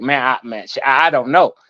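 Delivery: resigned, defeated, halting delivery. Imitating another speaker's earlier words after calling them defeated: mock defeated tone. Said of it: "you sound defeated".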